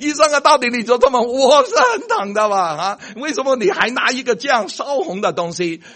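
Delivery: high, loud, alarmed crying out. Describing a patient facing a red-hot tool from the doctor, retelling a loud shout. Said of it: "你就大喊了".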